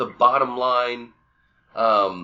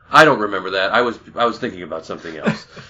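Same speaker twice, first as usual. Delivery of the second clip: loud, raised, utterly deadpan, dead-straight delivery; 3 semitones lower, 5 dB louder than usual. Quoting a film character's reply after a rescue claim: deadpan Drax impression. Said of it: "And just complete deadpan".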